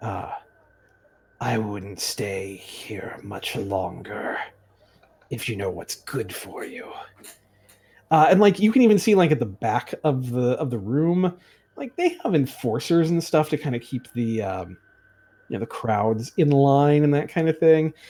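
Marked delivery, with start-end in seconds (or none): 0.0-6.9 very low, slow, muttered whisper under the breath. Voicing an angry fight organizer warning a player: whispering under his breath. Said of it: "whisper under his breath".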